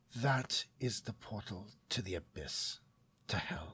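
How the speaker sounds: barely audible, very quiet, hushed, breathy whisper. A companion speaks inside the listener's mind, whispering. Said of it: "as he whispers".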